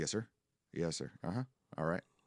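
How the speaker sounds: put-on terse, clipped, short Southern accent. Retelling own replies to a granddad: imitating own clipped Southern speech. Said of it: "my speech gets very clipped, like, short, and my Southern comes out".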